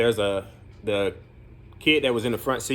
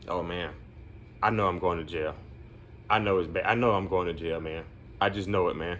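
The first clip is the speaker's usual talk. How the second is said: put-on nervous, anxious kid voice, lower, quieter; 4 semitones lower, 6 dB quieter than usual. Speaker acts out a kid back from the administration office, imitating a nervous kid. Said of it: "he's just really nervous".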